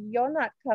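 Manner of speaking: horrible, unconvincing put-on British accent. Retelling what Charlotte said to the press, horrible British accent. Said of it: "that's a horrible British accent".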